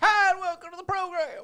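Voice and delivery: very loud, shrill yell. Imitating another speaker's yelling while greeting listeners: imitating Baker yelling. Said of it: "I was imitating you".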